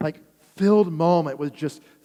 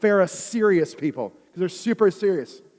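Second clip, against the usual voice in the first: usual speaking voice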